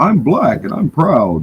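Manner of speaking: mock sad-sounding voice. Mimicking another speaker's pride line to tease: mock sad imitation. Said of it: "You sound sad, bro".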